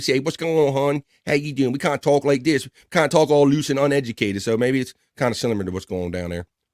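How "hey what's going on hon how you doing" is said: Baltimore accent with a twang. Explaining how people talk where he grew up in Baltimore, Baltimore twang. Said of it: "we got like a twang in our voice here".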